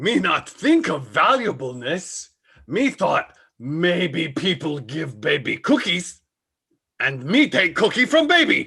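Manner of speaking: puppet monster voice with broken grammar. Sketch where Cookie Monster finds a baby: Cookie Monster voice. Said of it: "presents Cookie Monster Finds a Baby".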